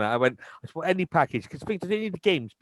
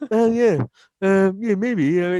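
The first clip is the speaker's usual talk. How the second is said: mock laughing, higher pitch; 2 semitones higher, 5 dB louder than usual. Retelling how a man laughed at him while he shouted: imitating him laughing. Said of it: "He's laughing at me".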